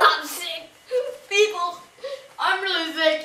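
fake, exaggerated sick crying whine.

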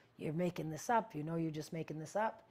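ordinary talk

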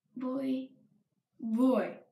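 normal talking voice

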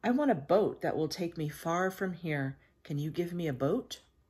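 ordinary delivery

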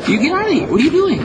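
put-on squeaky voice.

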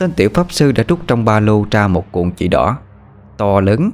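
plain reading voice

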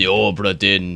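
put-on pirate accent.

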